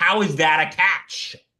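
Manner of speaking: high, drawn-out, excited yelling. Retelling yelling at the tv with a brother: retelling yelling at the tv. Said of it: "we're both sitting there yelling at the T V".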